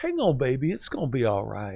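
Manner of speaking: put-on very southern, sweet, swooping Louisiana accent. Retelling what a woman said while massaging his shoulder, imitating a sweet southern Louisiana accent. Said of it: "very southern, sweet, a Louisiana flair".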